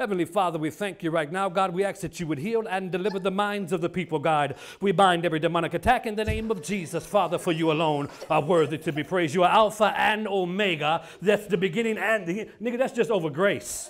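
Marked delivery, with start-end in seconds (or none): none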